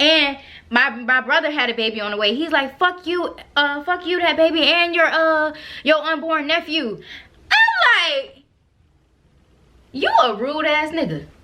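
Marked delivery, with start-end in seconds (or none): 2.8-7.0 put-on yell, much higher. Retelling what a man yelled while leaving the speaker's house, retelling a yell. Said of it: "So he's yelling".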